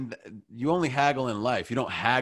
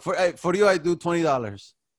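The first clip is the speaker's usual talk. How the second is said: put-on Middle Eastern accent, higher-pitched. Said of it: "It's pretty good".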